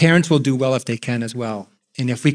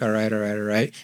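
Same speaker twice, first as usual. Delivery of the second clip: flat, expressionless deadpan, quieter; 4 semitones lower, 5 dB quieter than usual. Advising how to respond to someone stressed, showing the wrong way: deadpan. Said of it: "kind of like deadpan".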